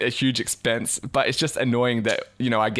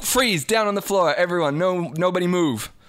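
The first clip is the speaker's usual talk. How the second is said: cop voice, pitched up, forceful; 7 semitones higher than usual. Acting out a skit as the cop bursting in to arrest someone: acting as a police officer. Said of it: "the cop who comes in to, like, arrest you".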